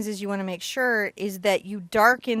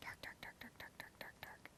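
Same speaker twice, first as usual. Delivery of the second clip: rattled-off, very hushed, fast whisper. Narrating while shading with a pencil, whispering.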